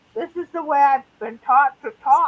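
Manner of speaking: plain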